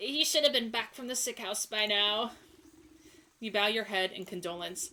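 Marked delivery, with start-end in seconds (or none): 0.0-2.3 put-on elderly woman's voice. Reading a game character's lines aloud: old lady voice. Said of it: "also an old lady voice".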